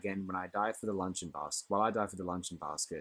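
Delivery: ordinary delivery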